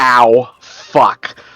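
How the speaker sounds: crying out in pain. Tabletop player voicing his character as it gets electrocuted, screaming in pain. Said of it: "he's gonna scream".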